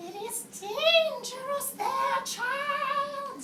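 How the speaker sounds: very high, slow, shrill voice.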